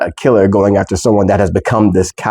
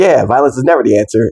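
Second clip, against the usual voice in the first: put-on carefree, breezy, cheerful delivery; 3 semitones higher than usual. Retelling a line Aang says, in a happy-go-lucky Aang voice. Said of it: "like this happy-go-lucky voice".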